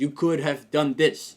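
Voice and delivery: put-on, slow, patronising, condescending drawl. Retelling how they answer their team when bothered, imitating own condescending tone. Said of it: "I speak in such a condescending tone where I'm like".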